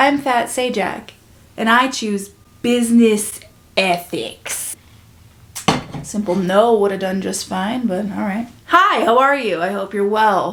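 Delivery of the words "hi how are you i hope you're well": sarcastic-sounding tone. Greeting viewers and asking how they are: sarcastic-sounding greeting. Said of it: "That sounded sarcastic".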